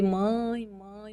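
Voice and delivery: very soft, hushed, under-the-breath voice. Retelling calling to the mother who lives next door, calling very quietly. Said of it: "bem baixinho".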